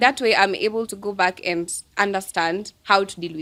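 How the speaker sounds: ordinary talk, nothing marked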